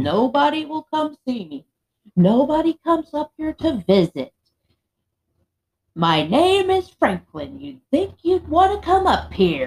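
mock yelling, high-pitched, loud and insistent. Retelling how Franklin yelled at the speaker: retelling Franklin yelling. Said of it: "Franklin was yelling at me".

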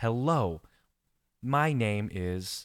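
slow, careful, deliberate reading aloud. Recalling reading a book aloud because he mumbled, he goes slow and deliberate. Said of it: "I would go slowly, like".

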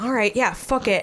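ordinary talk, nothing marked

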